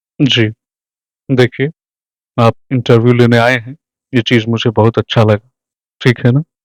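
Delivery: very calm, settled, composed, peaceful voice. Show how he talks to someone who has come to interview him: calm Pankaj Tripathi impression. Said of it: "बड़े ही शांत तरीके से पंकज जी बोलते हैं।".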